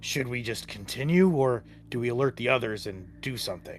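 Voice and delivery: quiet, hushed, low voice kept from others. Turning to a companion, away from the others, asking whether to warn them: hushed tone. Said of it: "in a hushed tone".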